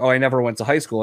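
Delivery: ordinary talk, nothing marked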